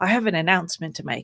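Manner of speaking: hushed, very quiet, low, dead-serious voice. Retelling the director calling everyone in: imitating a very quiet, serious announcement. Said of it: "very seriously, very quietly said".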